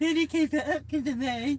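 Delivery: very high, shrill, loud, affected put-on voice. Retelling a mum speaking through a lowered car window: imitating mum's put-on voice. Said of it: "she did that voice in the back".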